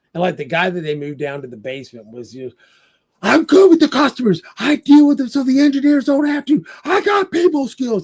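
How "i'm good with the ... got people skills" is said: loud, shrill, very high screaming outburst. Retelling a movie scene where an employee screams at consultants: imitating a character screaming. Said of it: "And he's screaming at him".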